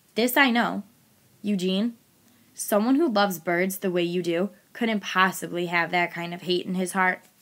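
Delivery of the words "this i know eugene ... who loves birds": usual speaking voice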